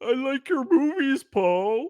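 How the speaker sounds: mocking taunt, shrill, very high and very loud. Retelling a remark heard from a crowd outside a theater, imitating a mocking voice. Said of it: "like a mocking voice".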